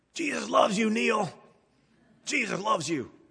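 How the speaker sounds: raspy voice, pitched high. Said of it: "in that famous raspy voice".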